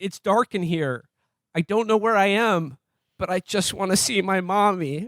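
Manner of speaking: weepy, tearful voice, speaking through tears. Recounting a movie scene, quoting the actor while imitating him crying. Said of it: "actor's crying".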